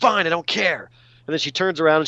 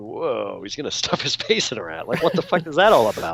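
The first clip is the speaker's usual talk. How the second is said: put-on younger-sounding, baffled kid voice; 4 semitones lower than usual. Retelling own reaction to the scene as a kid: imitating own childhood reaction. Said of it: "I remember kinda going".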